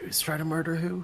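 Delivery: quiet whispering. Speaking in character after another character blurted something out: whispering quietly. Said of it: "whisper more quietly".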